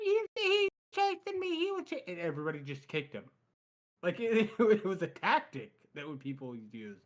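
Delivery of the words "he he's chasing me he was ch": put-on childlike, very high-pitched little kid voice. Quoting him in his little kid voice: high-pitched little kid voice. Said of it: "in his little kid high pitched voice".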